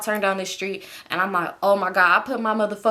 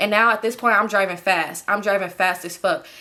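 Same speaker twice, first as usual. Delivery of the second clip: ordinary talk, nothing marked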